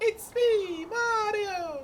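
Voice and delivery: booming exclamation, very high and very loud. Quoting a game character's line exactly the way he says it: imitating Mario. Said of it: "Quite literally the way he says it".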